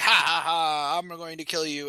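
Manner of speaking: put-on evil cackling. Retelling a scene where the villain cackles: mock villain cackle. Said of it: "Voidbringer cackles".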